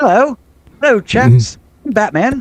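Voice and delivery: very high, slow, terrible fake British accent. Imagining Batman jumping out of the darkness: bad put-on British accent. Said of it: "I do terrible British accents".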